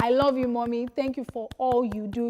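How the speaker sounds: plain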